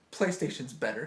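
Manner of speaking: usual speaking voice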